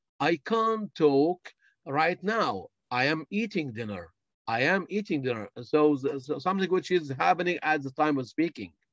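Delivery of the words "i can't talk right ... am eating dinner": ordinary talk, nothing marked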